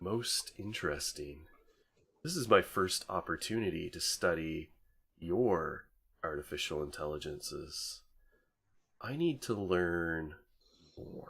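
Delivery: sleek, smooth synthetic AI voice, very soft, hushed. Voicing an AI speaking through the listener's neural interface, smooth AI voice. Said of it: "a smooth sounding A I voice that just says".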